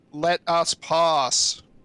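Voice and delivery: shouting. Calling out to a guard through a storm: yelling. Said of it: "I have to yell because it's wet".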